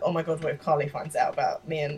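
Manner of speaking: ordinary talk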